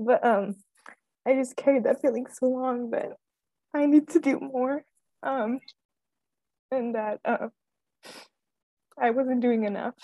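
tearful, emotional, crying while speaking. A speaker apologizes for crying and keeps telling their story, crying while speaking. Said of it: "I'm sorry, I keep crying, I'm so emotional".

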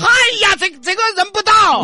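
shrill, very high, very loud yell of amazement. Looking at seafood they cannot recognise, shouting. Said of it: "不认识你喊什么喊啊".

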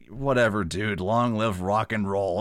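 very sarcastic, acted. Retelling a lighting technician's reply in a film scene, really sarcastic. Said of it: "really sarcastically".

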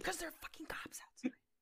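soft, unvoiced whisper.

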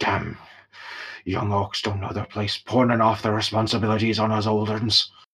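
grumbling under breath. Narrator voicing an old orc leaving after handing off a job: muttering as he walks away. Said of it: "he's just sort of muttering as he goes away".

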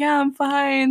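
put-on voice holding back tears, fighting back tears. Retelling answering worried friends after a painful fall: imitating holding back tears. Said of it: "trying to hold in my tears".

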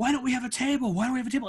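mock high-pitched screaming, insistent and demanding. Retelling a guy at a busy restaurant demanding a table: imitating a guy screaming.

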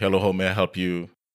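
ordinary delivery

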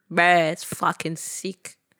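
mock exaggerated Australian accent with slang. Friends take turns trying an accent; the speaker tries again: put-on Australian wog accent. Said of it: "Do a wog accent".

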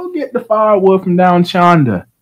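loud put-on Australian accent. Retelling what a lumberjack-looking guy said, in a put-on Australian accent. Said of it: "Why you give him an Australian accent?".

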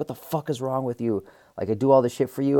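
held-back, furious, scream-like outburst. Recalling snapping and grabbing her plate of food, retelling a scream. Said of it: "as I'm screaming".

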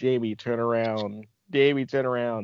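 ordinary talk, nothing marked

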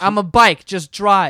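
mock screaming. Retelling what she screamed at everyone, imitating someone screaming. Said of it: "she was screaming".

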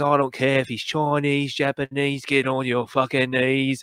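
put-on broad Cockney accent, laid on thick. Telling others about a Guy Ritchie role, you imitate Hugh Grant's big Cockney accent. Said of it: "he puts on this big Cockney accent".

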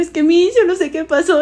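put-on tearful words spoken through crying. Retelling talking to a teacher in her office: imitating own past crying. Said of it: "y así estoy llorando ya".

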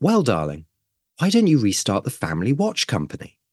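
mock light, offhand teasing tone, swooping lilt. Speaker recalls his mum's suggestion over sunday lunch, retelling a joking remark. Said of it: "jokingly goes".

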